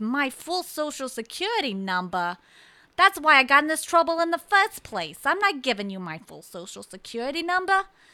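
loud indignant protest. Retelling a woman on the phone with a security company, imitating loud talking. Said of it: "And she's talking loud".

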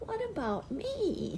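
squeaky voice, pitched high and small. Reading a story aloud, Piglet looks up and speaks, Piglet's squeaky voice. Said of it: "said in his squeaky voice".

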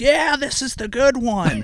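play-acted very high, shrieking, excited scream. Retelling a pilot's reply about his airplane: imitating Scott Crossfield screaming. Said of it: "screaming at me".

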